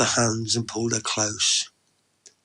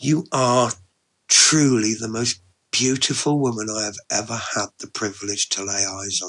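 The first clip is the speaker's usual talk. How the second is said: ordinary delivery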